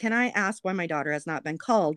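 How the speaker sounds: ordinary talk, nothing marked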